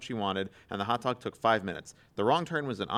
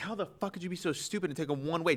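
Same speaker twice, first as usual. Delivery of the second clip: mock berating, high, furious screaming; 7 semitones higher, 3 dB quieter than usual. Retelling how a girlfriend screamed at him over a wrong turn: imitating someone screaming. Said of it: "she was screaming at him".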